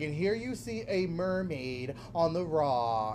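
slow, measured narrator voice. Retelling a YouTube video about mermaids, imitating the narrator's voice. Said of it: "the guy's voice was like this".

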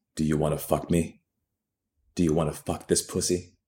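low, hushed, threatening, menacing voice. Narrator reads the woman's question to him, in a threateningly low voice. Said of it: "says in a threateningly low voice".

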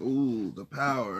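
sarcastic, mocking, sarcasm laid on thick. Retelling a dream where Freddy mocks the speaker in front of students, sarcastic Freddy impression. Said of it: "he's sarcastic as fuck".

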